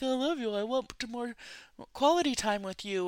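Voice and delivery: mock-crying, put-on tearful voice. Retelling a man's words to his partner, imitating someone crying. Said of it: "crying like".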